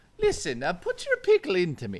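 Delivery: sing-song voice with wide, swooping pitch swings. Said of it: "Why does that sound like Mario?".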